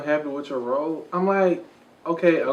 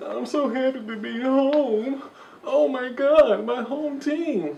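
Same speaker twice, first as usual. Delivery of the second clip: put-on tearful voice, higher pitch; 9 semitones higher than usual. Retelling a press conference where he cried: imitating Dwight Howard crying. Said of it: "he was crying at the press conference".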